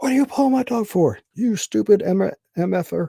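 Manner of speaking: very high, shrill, loud, furious screaming. Retelling a dog owner screaming at the speaker: imitating a guy screaming. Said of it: "this guy starts screaming at me".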